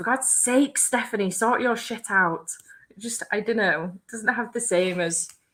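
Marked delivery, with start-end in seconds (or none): 0.0-2.5 stern, scolding strict-teacher voice. Speaker imagines scolding self at home by full name, in strict teacher voice. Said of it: "strict teacher voice".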